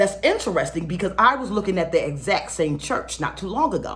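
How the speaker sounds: ordinary delivery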